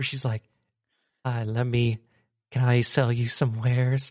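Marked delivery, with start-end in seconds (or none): 1.2-4.1 put-on whisper, much slower and lower. Describing a game's halfling merchant, imitating how she whispered her line. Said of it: "kind of whispered when she talked".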